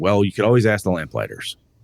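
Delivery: ordinary talk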